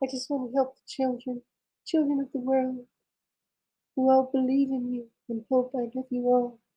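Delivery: very high, soft onstage pop-star voice. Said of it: "When he's on stage".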